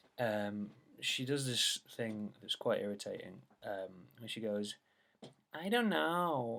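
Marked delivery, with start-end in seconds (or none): 5.6-6.6 high, put-on childish American accent. Describing her most annoying catchphrase, in a childish American accent. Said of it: "in this American accent".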